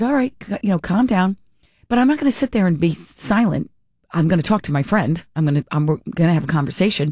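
ordinary talk

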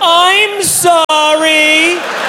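very high yelled delivery.

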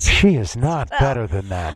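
documentary narrator-style announcing voice. Hosts discussing a woman's conduct, one answers in narrator voice. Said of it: "Narrator voice".

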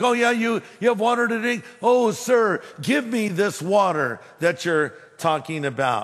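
heavy sarcasm, mocking tone. Retelling the woman's answer to Jesus about the water: imitating a sarcastic tone. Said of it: "She's being sarcastic".

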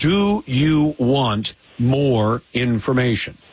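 slow deliberate delivery. Speaker repeats his question to the other speaker, asking it slowly. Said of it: "I'm going to ask it again slowly".

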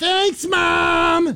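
put-on very high yelled cartoon-kid voice, "mom" stretched. Retelling a buddy yelling at a cop while walking away; yelled Eric Cartman impression. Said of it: "in his best Eric Cartman impression".

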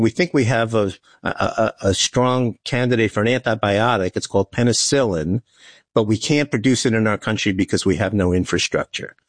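ordinary delivery

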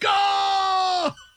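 yelling loudly.

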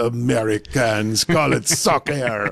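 put-on French accent. Imitating a french gentleman from a video, in a french accent. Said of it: "That was a really good French accent".

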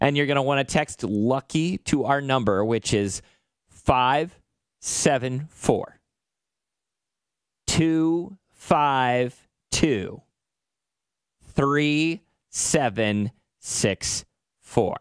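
drawn-out, very, very slow delivery. Giving listeners the number to text for a fundraiser; saying it really slow. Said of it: "I'm going to say it really, really slow".

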